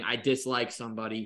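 plain

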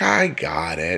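snide, mocking, sarcastic. Retelling a partner's answer when pushed to pick food: imitating a sarcastic reply. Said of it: "and then the sarcasm, she's like".

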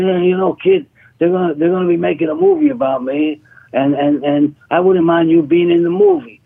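talking like a prizefighter. Retelling what a boxer told him at a club: imitating a boxer accent. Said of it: "in his accent, you know, he had this boxer accent".

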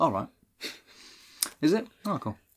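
put-on unbothered tone. Retelling how a character reacts to news about her father's killer: imitating an unbothered reaction. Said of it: "takes this, like, extremely well".

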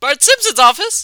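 voice cracking. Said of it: "that was a voice crack".

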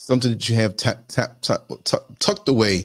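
stammering and stuttering over the words. Explaining snacks to keep for little kids, stuttering mid-sentence. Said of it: "So I'm stuttering now?".

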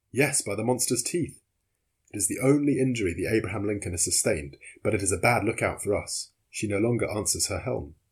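ordinary talk

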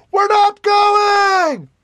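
shrill, very high, loud yell, drawn-out "going". As narrator, voicing one of the elves on the ship, shouting. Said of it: "one of the elves on the ship shouts".

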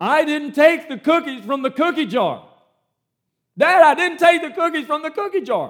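put-on very loud, high-pitched child's scream. Illustrating a child denying to his father, screaming at the top of his lungs. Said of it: "screaming at the top of his lungs".

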